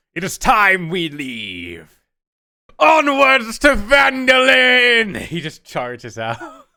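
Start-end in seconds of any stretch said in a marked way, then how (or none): 0.1-5.1 put-on high, slow, booming, eccentric old dwarf voice. Voicing the dwarf who called for Sildar, in Gungeon's eccentric old dwarf voice. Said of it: "very eccentric old dwarf".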